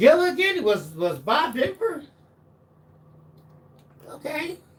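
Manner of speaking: taken aback. Reacting to another speaker's answer in a group chat, surprised. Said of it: "Why you sound surprised".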